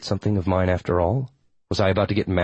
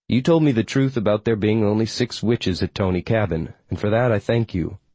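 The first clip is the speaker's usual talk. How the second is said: ordinary delivery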